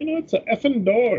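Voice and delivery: put-on horrible Irish accent at very high pitch. Comparing two characters, quoting the Irishman in a bad Irish accent. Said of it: "I'm horrible at Irish accents".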